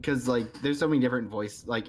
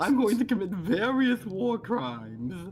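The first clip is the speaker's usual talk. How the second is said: zany, very high pitch; 10 semitones higher than usual. Asked about a character voice, the speaker performs it: Chuckles the Clown voice. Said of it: "like Chuckles the Clown".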